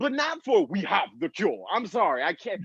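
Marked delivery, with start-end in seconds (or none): 0.7-1.6 put-on Nigerian English accent. Imitating a doctor from Nigeria announcing a cure: imitating a Nigerian accent. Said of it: "that accent with that message".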